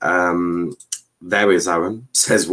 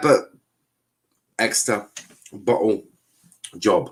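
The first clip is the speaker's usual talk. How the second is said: slow, deliberate, spelled-out word-by-word phrasing. Talking about exeter's promotion chances, said slowly. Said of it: "I thought I'd say that slowly".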